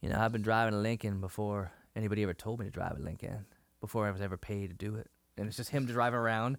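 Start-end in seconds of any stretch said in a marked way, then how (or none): 0.0-5.1 car-commercial spokesman announcer voice. Retelling a car commercial line: Matthew McConaughey voice. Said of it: "the Matthew McConaughey impression".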